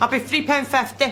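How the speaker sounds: put-on Scottish-accented speech. Taking a food order at a counter and asking where the customer will sit: Scottish accent. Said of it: "slagging of the Scottish accent".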